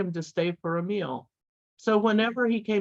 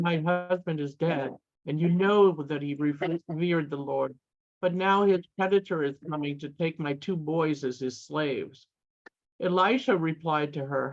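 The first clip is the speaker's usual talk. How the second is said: normal talking voice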